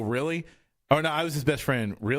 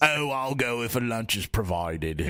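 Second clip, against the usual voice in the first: put-on slow, crotchety old businessman voice with London accent. Voicing a business character in [name]'s voice: crotchety old London businessman voice. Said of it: "That's the voice I used for this business guy".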